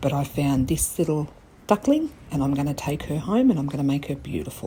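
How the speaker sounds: hushed whisper. Filming in a Salvation Army store while the staff watch, whispering. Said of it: "I'm whispering because I'm at my local Salvation Army store".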